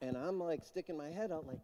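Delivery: ordinary delivery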